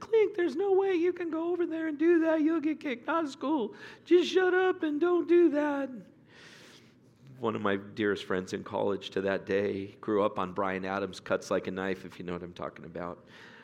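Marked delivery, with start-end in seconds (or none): 0.0-5.9 put-on very high little Southern boy voice. Retelling how a friend from Florida held him back: imitating Eric Taylor's Southern voice. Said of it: "had a little Southern boy's voice".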